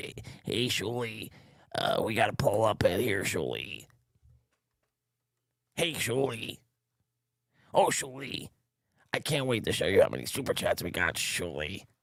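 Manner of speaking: soft, scratchy, rasping little weasel voice. Mocking producer Joe interrupting the show: imitating producer Joe's raspy voice. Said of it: "that fucking little raspy little weasel".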